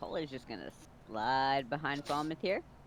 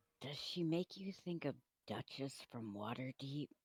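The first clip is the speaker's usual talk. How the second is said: whispered, quieter; 9 dB quieter than usual. Playing a character who leans toward Roger to ask: whispering. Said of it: "just whisper".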